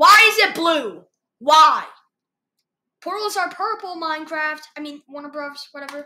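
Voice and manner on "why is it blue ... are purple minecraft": very loud, full-volume yelling. Making fun of a Minecraft trailer, the speaker is yelling at the trailer. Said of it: "I'm just yelling at the trailer".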